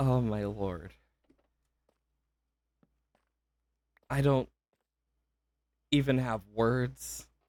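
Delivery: fighting back crying. Thanking people and at a loss for words, holding back tears. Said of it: "I'm trying to hold back any form of crying".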